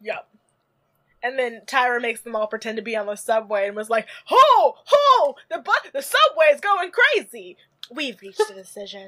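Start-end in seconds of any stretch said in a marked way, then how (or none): 4.2-9.1 high, loud, belted host voice swooping upward. Retelling how Tyra made the girls pretend to be on the subway: Tyra impression. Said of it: "That's my Tyra impression".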